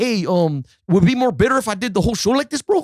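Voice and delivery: put-on Spanish accent with a laid-back delivery. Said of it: "so I do the voice to him. I'm like".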